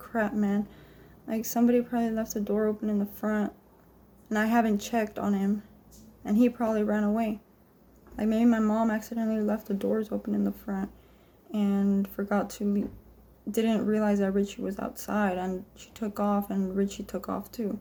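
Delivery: plain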